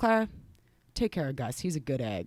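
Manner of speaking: mock gravely earnest, dead-serious voice. Recalling her dad's last words before leaving for Maine, retelling dad's dead-serious voice. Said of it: "in the most serious voice I've ever heard him".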